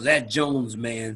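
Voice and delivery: put-on very low, deep New York accent. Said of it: "he had very deep New York accent".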